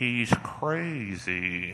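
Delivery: spot-on, accurate cartoon snowman voice. Retelling what she said about the speaker's friend; Olaf voice. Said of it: "in the perfect Olaf voice".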